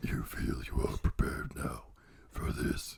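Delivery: hushed, breathy whispered demon voice. Narrating a scene aloud, the speaker does the demon voice. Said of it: "You sound like the guy from Invincible, that demon guy".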